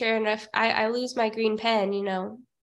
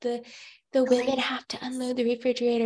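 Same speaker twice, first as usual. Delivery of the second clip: put-on whispering. Retelling what Michelle whispered to him: imitating Michelle whispering. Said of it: "Michelle whispers to him".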